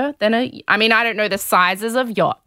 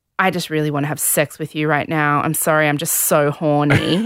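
put-on whisper, lower; 5 semitones lower than usual. Retelling what a woman on a show whispered into his ear: imitating someone whispering. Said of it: "she whispers into his ear".

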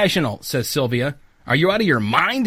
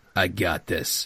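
forced, put-on, artificially deep, very low bass voice; 11 semitones lower, 7 dB quieter than usual. Reading a story aloud, a character's line in an artificially deep voice. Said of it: "says in an artificially deep voice".

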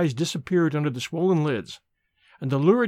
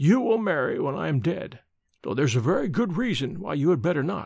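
ordinary delivery, nothing marked

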